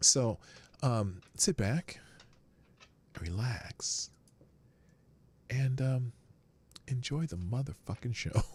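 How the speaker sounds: like a radio host. Opening a video and Q and A day, the speaker uses an NPR voice. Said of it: "I'm doing my N P R voice today".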